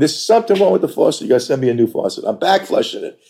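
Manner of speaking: play-acted fed-up, insistent yelling. Retelling a call to the faucet company's service line, retelling yelling on the phone. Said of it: "I'm yelling at the guy on the phone".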